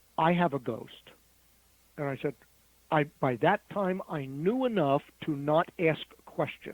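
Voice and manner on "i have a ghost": speaking quietly. Retelling what a woman from the flight said: imitating someone speaking quietly. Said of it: "she said very quietly".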